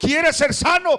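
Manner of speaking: high, loud, ringing calling voice.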